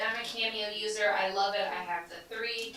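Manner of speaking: ordinary talk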